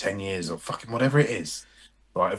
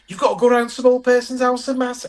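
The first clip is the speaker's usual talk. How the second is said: very high, shrill, loud put-on Scouse accent; 8 dB louder than usual. Acting out the boss woman from Geordie Shore giving someone a job, put-on Scouse accent. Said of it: "And that's a Scouse accent".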